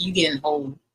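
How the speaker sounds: ordinary delivery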